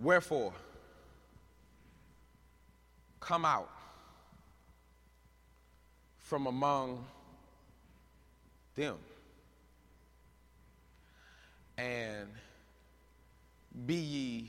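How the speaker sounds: very slow, drawn-out, deliberate reading. Speaker reads a scripture verse aloud to listeners, reading it slow. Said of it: "we read it slow".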